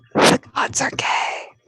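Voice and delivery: very slow, drawn-out, breathy ASMR whisper. Reading out a requested last comment: asmr whisper voice. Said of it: "and then the A S M R is stopping".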